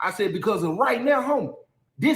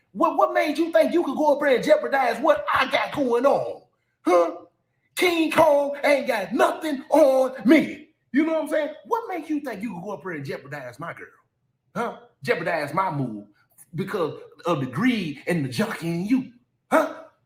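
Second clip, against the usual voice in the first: mock big, theatrical, energetic confrontational delivery. Retelling how he confronted a man over his girl, putting on a theatrical confrontation. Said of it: "I'm being as theatric as possible".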